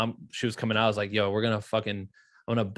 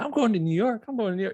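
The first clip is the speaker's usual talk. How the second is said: very high, delighted, excited scream; 12 semitones higher than usual. Retelling giving mom a new york trip: imitating mom screaming excitedly. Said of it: "she's screaming".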